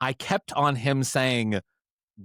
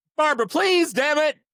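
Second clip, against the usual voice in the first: very high, queeny yell; 4 dB louder than usual. Imagining a character yelling at his dogs: imitating Bill's queeny yell. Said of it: "yell in his queeny-assed voice".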